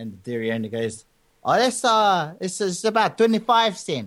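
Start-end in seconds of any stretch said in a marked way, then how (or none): 1.4-4.1 put-on Samoan accent, much higher, slower. Retelling a joke, voicing the dairy owner answering a customer, in a Samoan accent. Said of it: "this is my best Samoan accent".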